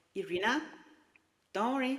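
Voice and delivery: steady, soothing, calm, earthy, grounding voice. Imitating a man reassuring her, imitating his calm, grounding voice. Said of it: "his calm voice, but also very earthy, very grounding voice".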